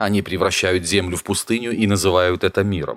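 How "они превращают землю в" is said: usual speaking voice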